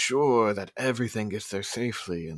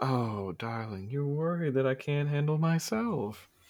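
slow, languid, breezy drawl, dismissive and totally unbothered; 4 semitones higher than usual. Voicing a character who speaks up behind a player: voicing Sally. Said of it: "and she goes".

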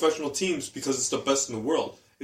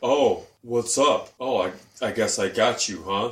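put-on creepy man's voice, lower; 4 semitones lower than usual. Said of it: "real creepy about it".

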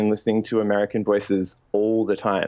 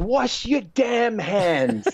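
play-acted shrill, very high, drawn-out shout; 11 semitones higher than usual. Recounting the woman in the kitchen yelling at everyone, retelling her yell. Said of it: "she's yelling at everyone".

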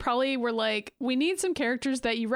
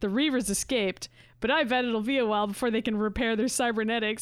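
put-on smug voice. Recapping an X-Men episode, quoting Cyclops's wrap-up line, smug Cyclops impression. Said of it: "he says it like really smugly".

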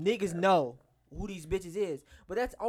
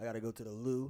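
put-on English accent, much lower and quieter; 9 semitones lower, 7 dB quieter than usual. Imagining Idris Elba whispering in your ear, in an Idris Elba English accent. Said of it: "in that English accent".

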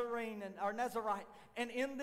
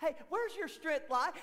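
high-pitched wicked woman's voice; 5 semitones higher, 4 dB louder than usual. Retelling the Samson story and voicing Delilah as she questions him: imitating wicked Delilah. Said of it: "Here goes old wicked Delilah. And she sit there and say".

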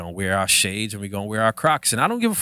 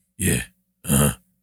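put-on macho tough-guy voice, lower; 7 semitones lower than usual. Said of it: "You start talking like that after a while".

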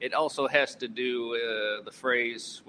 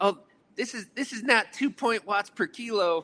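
mock, very high-pitched grumbling complaint; 10 semitones higher than usual. Retelling how riders in a group ride complained: imitating complaining riders. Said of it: "there started to be complaining".

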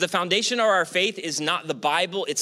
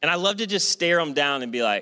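ordinary talk

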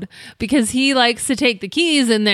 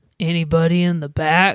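put-on creepy man voice, much lower pitch; 6 semitones lower than usual. Retelling hiding while a man called out, creepy man voice. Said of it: "And he goes".

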